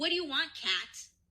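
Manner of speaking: very angry, hostile, irritated tone. Retelling a story, the speaker voices the mom answering Kat's eighth call: imitating an angry answer. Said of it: "she answers very angrily".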